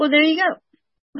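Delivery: high, slow, knowing counselor voice.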